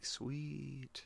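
very quiet, drawn-out, whispery doll voice. Retelling how a doll whispers to a character: imitating a doll's quiet whisper. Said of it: "quiet and whispery".

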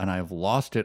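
ordinary delivery

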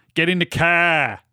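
attempted Philadelphia accent. Asked to try a Philly accent: attempted Philly accent. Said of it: "Could do a Philly accent then".

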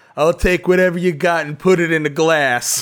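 put-on very loud, slurred, drunk-sounding voice. Retelling how Nick ordered from a sweet old lady bartender, imitating Nick slurring. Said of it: "you're like slurring".

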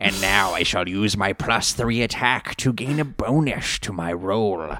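menacing, threatening evil-villain voice. A game master demonstrates a villain reading off their stats, in a menacing villain voice. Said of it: "reads off their stats in a menacing way".

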